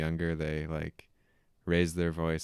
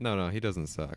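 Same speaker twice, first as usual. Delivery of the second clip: ordinary talk, nothing marked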